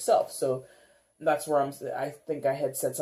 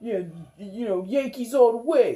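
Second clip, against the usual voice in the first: terrible put-on New York accent, pitched up; 7 semitones higher, 4 dB louder than usual. Illustrating local sports loyalty with a fan's line, terrible New York accent. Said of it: "that's a terrible New York accent".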